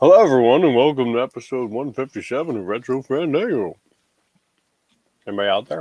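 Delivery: mumbled speech while chewing a mouthful of food. Podcast host opening episode one fifty-seven: mumbling while chewing crackers. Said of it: "chew my crackers at the same time and mumble into the microphone".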